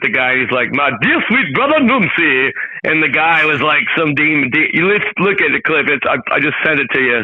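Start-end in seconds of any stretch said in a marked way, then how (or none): 0.7-2.5 imitated animated eighties comedy-film delivery. Quoting a favorite movie line: imitating Eddie Murphy. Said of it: "Eddie Murphy started a movie called The Golden Child, and he walks in".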